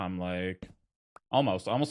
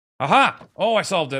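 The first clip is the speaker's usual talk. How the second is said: very loud, swooping, excited whooping and yelling; 10 semitones higher, 14 dB louder than usual. Believing the problem is finally solved: excited yelling. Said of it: "Sorry for yelling".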